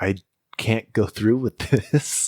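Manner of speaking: choked-up, tearful, weeping delivery. Retelling own past breakdown to the other speaker: imitating own past crying.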